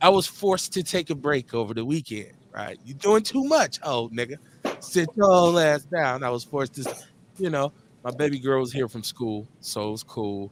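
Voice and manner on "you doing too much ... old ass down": high, slow scolding voice. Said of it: "sometimes your body say".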